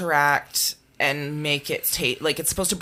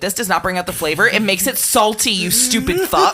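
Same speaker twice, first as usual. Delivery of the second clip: raised, aggressive, in-your-face outburst; 5 semitones higher, 7 dB louder than usual. Retelling what was said to an ex about salted watermelon: aggressive retelling to ex. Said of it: "I got a little aggressive there".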